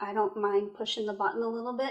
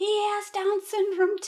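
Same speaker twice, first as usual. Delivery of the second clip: put-on child yell, much higher, louder; 11 semitones higher, 5 dB louder than usual. A mother retells her child yelling at her from the back, retelling a child yelling. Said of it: "she's yelling at me".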